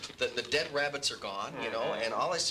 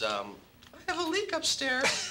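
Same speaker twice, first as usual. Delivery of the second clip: put-on very high, cute, sing-song little girly voice; 13 semitones higher than usual. Speaker retelling a voice heard from behind them, cute little voice. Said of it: "this little voice that goes".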